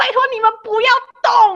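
mock yell, very high and loud. Chasing a runaway barking dog, re-enacting what was yelled to everyone around: retelling a shout. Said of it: "我就大喊".

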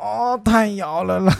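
very slow, drawn-out teasing voice. Imitating someone complaining about being shaken: imitating someone's voice. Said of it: "你现在这样在模仿他".

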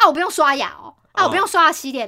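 put-on hotly angry, loud delivery. Retelling a roommate quarrel, the speaker acts out the other roommate's mock-angry retort. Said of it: "很很生气的回他说".

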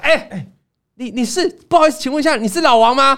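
play-acted loud, stumbling call. Retelling how a pharmacist suddenly called out at school, retelling a loud call. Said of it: "这这这么大声".

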